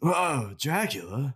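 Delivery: high surfer dude voice. Discussing a Dracula movie, a speaker shows how he wished it were done; Bill from Bill and Ted voice. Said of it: "some Bill voice doing it. Like Bill and Ted".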